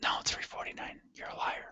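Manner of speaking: very soft, hushed whisper. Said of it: "why are we whispering?".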